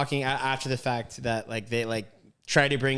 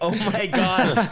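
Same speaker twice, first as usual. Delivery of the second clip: put-on embarrassed laughing, higher and louder; 8 semitones higher, 6 dB louder than usual. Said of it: "embarrassed laughing".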